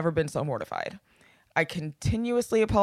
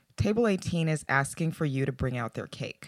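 put-on whisper, lower and quieter; 4 semitones lower, 5 dB quieter than usual. Retelling how a coworker came up during a drink order: imitating a coworker whispering. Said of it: "up and whispers".

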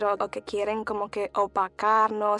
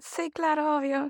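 mocking, sarcastic, pitched up; 5 semitones higher than usual. Acting out a reply to people who ask about boats: sarcastic reply. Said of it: "como que algo sarcástico".

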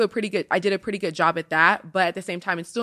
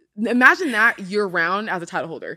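ordinary talk, nothing marked

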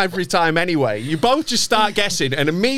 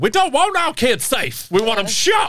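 spot-on, pitched-up, put-on Texan accent; 5 semitones higher than usual. A speaker imitates what Texans would say, in a Texan accent. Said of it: "That was a spot on Texan accent".

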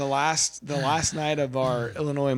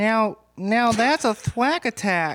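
fake woman's voice, higher and louder; 8 semitones higher, 5 dB louder than usual. Reading a catchphrase into the mic as told: put-on woman's voice. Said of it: "You gotta read it into the mic as a woman".

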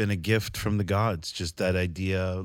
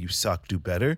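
usual speaking voice

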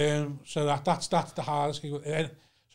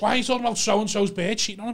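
exasperated, angry, fuming, pitched up; 7 semitones higher, 3 dB louder than usual. Retelling own complaint from the back at a roast: imitating own fuming rant. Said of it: "fuming that no one was talking".

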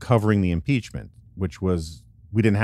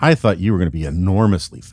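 put-on utterly let-down, deflated, unbelievably disappointed tone; 4 dB louder than usual. Retelling what a kid at the airport said on meeting the speaker, mock-disappointed voice. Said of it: "with this unbelievably disappointed voice".

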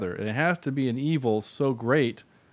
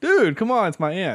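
put-on teenager voice, pitched a bit higher; 6 semitones higher, 4 dB louder than usual. Praising a movie's Spider-Man bit, the speaker quotes him in Spider-Man teenager voice. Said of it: "only in a teenager voice".

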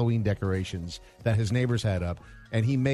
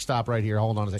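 plain

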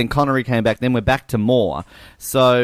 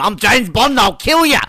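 high, loud, bad put-on Australian accent. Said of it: "that's a terrible Daniel Craig".

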